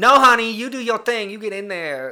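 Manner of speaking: put-on loud, yelled Southern American accent. Imitating a mom who won't let her kid quit, yelled southern accent. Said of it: "There I go yelling again, and in the southern accent".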